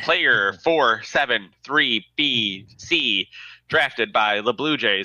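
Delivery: slow, robotic, automated announcer-style voice reading evenly. Describing draft day, mimicking the robot voice that calls in. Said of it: "like a robot voice calls in and just says".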